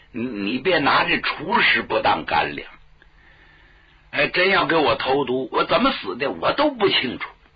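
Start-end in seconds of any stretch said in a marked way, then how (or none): none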